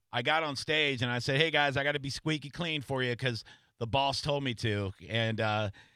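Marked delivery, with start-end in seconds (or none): none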